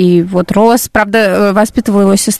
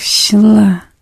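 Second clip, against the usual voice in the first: scornful sneering smirk, mouth open. Teaching a Korean reply to an unfunny joke: contemptuous smirk, mouth open. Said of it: "Это надо с презрительной такой ухмылкой, не закрывая рот. Говорит так".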